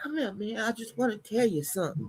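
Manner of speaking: put-on whispering. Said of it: "he was trying to whisper in your ear".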